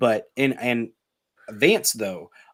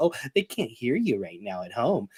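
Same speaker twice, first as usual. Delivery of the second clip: imitated soft, giggly girly voice; 5 dB quieter than usual. Retelling what a debate moderator said: imitating a girly giggle. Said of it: "a little girly giggle about".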